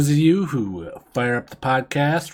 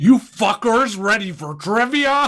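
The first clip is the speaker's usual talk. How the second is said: angry voice, pitched very high; 9 semitones higher than usual. Kicking off a trivia segment in character as the angry trivia guy Guido. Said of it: "Angry trivia guy?".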